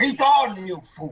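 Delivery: contained, mild, restrained battle cry. Voicing a character turning undead, smashing down his hammer: Theoden yelling. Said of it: "Theoden will yell".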